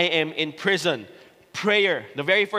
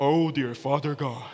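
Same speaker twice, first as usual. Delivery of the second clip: low, slow, drawn-out special praying voice; 4 semitones lower, 3 dB quieter than usual. Describing a man whose voice changes when he prays, imitating his prayer voice. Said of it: "his voice changes for some reason".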